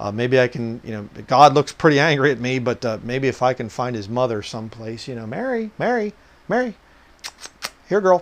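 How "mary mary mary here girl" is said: high, mocking, sarcastic calling out. Acting out people at judgment calling for Mary: mock sarcastic calling out. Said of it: "little sarcasm".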